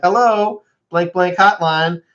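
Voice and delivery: high, bright recorded-message delivery. Retelling how a friend's voicemail greeting fools the speaker: imitating Cody's voicemail greeting. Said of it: "'cause you're like".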